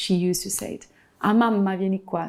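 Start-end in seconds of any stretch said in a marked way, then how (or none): none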